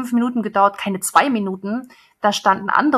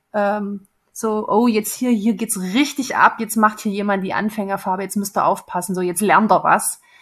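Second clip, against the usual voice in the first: ordinary talk, nothing marked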